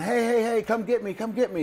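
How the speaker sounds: shrill, very high, acted-out yell. Retelling a story of a man who fell down a hole: imitating a man yelling for help. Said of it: "he's yelling".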